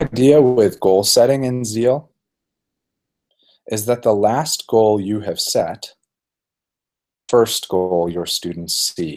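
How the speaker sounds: slowed-down speech. Speaker explaining goal setting, having just promised to slow down: deliberately slowing down. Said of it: "So I'm going to slow down".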